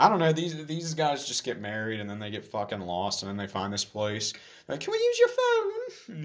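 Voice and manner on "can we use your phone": put-on British accent, very high pitch, slow pace. Retelling a movie scene where newlyweds ask to use a phone: put-on british voice. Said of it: "I don't know why I gave them that voice".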